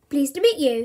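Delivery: said with a smile. Bertie, introduced by Mum to Mr. and Mrs. Mossop, greets them: said with a smile. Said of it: "smiled Bertie".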